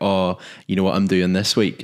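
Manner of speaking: plain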